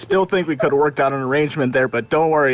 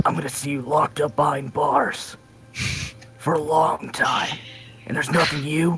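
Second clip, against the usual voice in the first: hushed, breathy whisper in detective voice; 2 semitones higher, 5 dB quieter than usual. A player speaking in character to the other characters: detective voice. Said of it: "I'm going to put on my best uh, detective voice".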